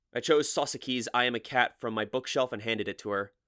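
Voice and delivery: ordinary talk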